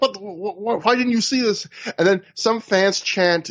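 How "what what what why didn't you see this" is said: put-on angry yell, heated, almost real. Describing a wrestler chewing out a referee, the speaker imitates his angry yell. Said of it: "Aries really yells at him in a way that feels almost real angry".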